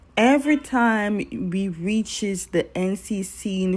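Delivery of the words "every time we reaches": usual speaking voice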